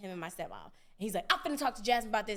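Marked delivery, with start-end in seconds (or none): 1.3-2.4 put-on riled-up, agitated voice. Retelling a father's reaction to a phone call: imitating someone riled up. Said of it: "he getting all riled up".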